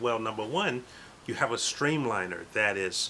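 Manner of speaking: normal talking voice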